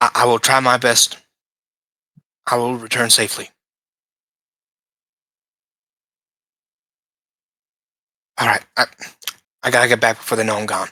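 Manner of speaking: quiet whisper. Voicing a character secretly reporting into a device: character whispering. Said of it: "kinda whispering".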